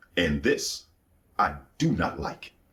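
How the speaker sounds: play-acted stern, fatherly voice, slow. Retelling words spoken to them in a vision: quoting a stern voice. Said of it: "his voice changed. It got stern".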